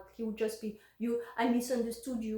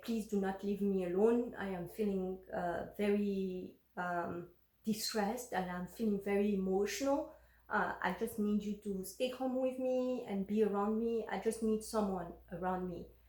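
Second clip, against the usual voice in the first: ordinary talk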